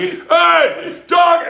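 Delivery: loud, very high acted-out shout. Retelling how a guy greeted him across the bar, imitating his yell. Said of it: "Guy's yelling at me across the bar".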